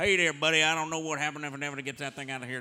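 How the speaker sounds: very loud, high, put-on Cajun country accent. Doing how their Groveland, Florida boys talk, imitating a Cajun accent. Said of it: "that's Cajun".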